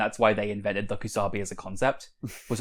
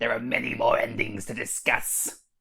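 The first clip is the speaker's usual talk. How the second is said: put-on, mock-angry character voice. Discussing the game's endings, a speaker breaks into an angry Shinto priest voice. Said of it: "I hate this voice".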